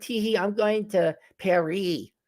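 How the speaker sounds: mocking, giggly put-on voice, high and slow.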